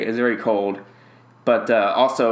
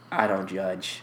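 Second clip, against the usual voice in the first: soft, level, indifferent flat monotone; 3 semitones lower, 7 dB quieter than usual. Describing a show character who doesn't care, quoting him in a flat monotone. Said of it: "It's just so, like, monotone".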